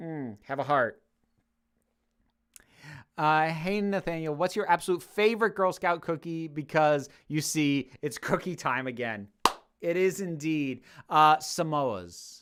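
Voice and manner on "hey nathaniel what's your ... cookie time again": ordinary talk, nothing marked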